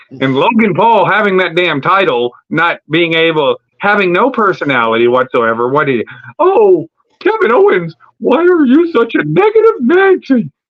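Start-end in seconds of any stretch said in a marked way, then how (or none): 6.4-10.4 high, swooping cartoon mouse character voice. Act out an annoying man with a title and no personality, in a Mickey Mouse voice. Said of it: "in his fucking Mickey Mouse voice".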